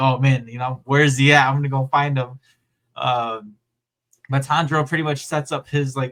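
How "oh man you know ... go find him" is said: usual speaking voice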